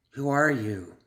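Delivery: hissing, insistent voice. Leaning hard on the wounded assassin, she demands an answer again, hissed. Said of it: "she hissed again".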